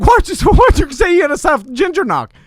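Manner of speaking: mock incredulous tone, pitched high in disbelief. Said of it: "but I'm like".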